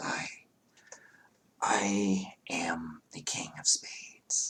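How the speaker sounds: very slow, hushed, almost-whispered voice. A storyteller voicing a hooded masked figure introducing itself, near whisper. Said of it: "a almost a whisper".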